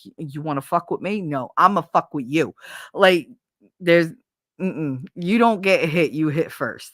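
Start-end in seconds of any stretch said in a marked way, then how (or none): 0.0-2.5 heavy put-on Jersey Italian accent. Imitating the neighborhood mentality: imitating a thick italian neighborhood accent. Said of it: "that very Italian".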